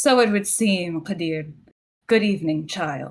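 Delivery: cold, aristocratic noble voice. Trying out a character voice as someone requested: cold aristocratic noble voice. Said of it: "Go for the cold, aristocratic, noble uh, voice".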